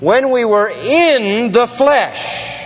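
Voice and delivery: slow, high voice leaning hard on "in".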